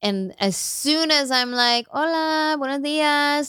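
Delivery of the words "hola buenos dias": put-on proper Spanish accent, pitched up. Recounting trips to Vallarta, the speaker says a greeting with a Spanish accent. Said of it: "you do it with the accent".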